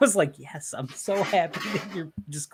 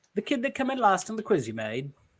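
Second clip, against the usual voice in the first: put-on British accent, higher; 4 semitones higher than usual. Repeating a line on request from others: British accent. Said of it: "Very British".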